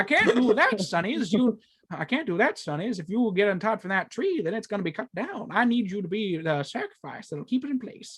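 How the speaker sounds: put-on old-timey, old-west cowboy voice. A grandpa refuses to untie the kids from the tree, old timey cowboy voice. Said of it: "sound like an old timey cowboy".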